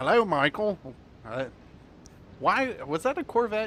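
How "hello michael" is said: British accent spoken at a raised pitch. The speaker practices an impression of the car greeting Michael, KITT impression with British accent. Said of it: "Why did it have a British accent?".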